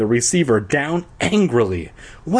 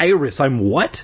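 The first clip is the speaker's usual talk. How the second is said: ordinary delivery, nothing marked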